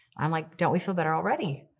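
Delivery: ordinary delivery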